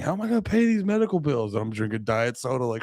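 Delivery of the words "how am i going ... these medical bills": very high, frantic, panicked screaming. Acting out a wife screaming about medical bills: imitating a wife screaming. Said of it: "Your wife's screaming".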